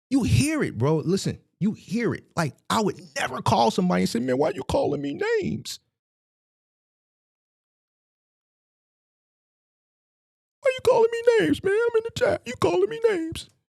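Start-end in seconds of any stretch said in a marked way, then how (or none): 4.2-13.4 shrill, high, wounded and upset emotional tone. Mocking the other speaker's complaint about name-calling: imitating someone emotional. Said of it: "You're emotional".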